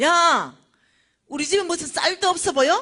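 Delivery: high, loud, irritated, angry yell.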